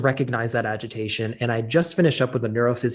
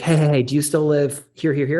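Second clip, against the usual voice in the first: put-on urgent, panicked, frantic, repeated; 3 semitones higher, 4 dB louder than usual. Retelling a phone call from an old family friend, imitating Steve's frantic call. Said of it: "And he's frantic".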